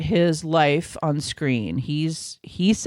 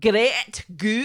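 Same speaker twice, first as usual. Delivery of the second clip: quick fake Scottish accent, pitched up; 7 semitones higher than usual. Answering a request to say the show's name in a put-on Scottish accent. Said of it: "Can you say that in a Scottish accent?".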